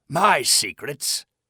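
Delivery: raspy and out of breath. Reading a story, the grandfather answering her in a raspy, tired voice. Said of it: "asked the man in a raspy voice".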